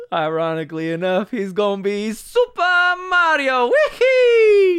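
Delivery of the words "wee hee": very high, loud, stretched-out wee-hee whoop. Joking about the new movie casting: Super Mario impersonation. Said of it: "I just did a better impersonation of Super Mario".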